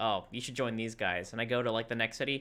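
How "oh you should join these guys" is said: imitated whisper, lower. Retelling a character urging which company to join: imitating a whisper in the ear. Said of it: "whispering in my ear".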